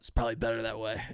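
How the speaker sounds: hoarse, worn-out, nearly gone voice. Retelling what the comedian's boss said after the show: sounding like Steve-O. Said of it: "You sound like Steve-O".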